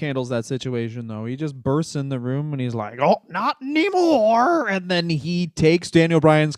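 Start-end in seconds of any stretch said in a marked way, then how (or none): 3.0-4.7 bursting in at a very high pitch. Acting out a wrestler bursting into a room: Road Warrior Hawk impression. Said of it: "That was my Road Warrior Hawk".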